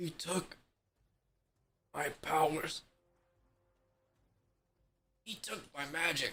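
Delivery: barely audible, very quiet, under-breath mutter. A wizard sees his buddy in critical condition, muttering under his breath. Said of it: "muttering under his breath".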